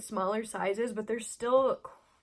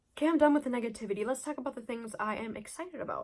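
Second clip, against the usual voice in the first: really fast, rushed, rattled-off, words tumbling out. Wrapping up a rant about Sephora's bestseller list, really fast. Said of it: "I said that really fast".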